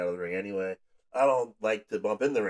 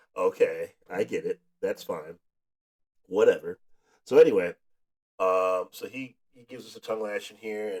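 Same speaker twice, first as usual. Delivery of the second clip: usual speaking voice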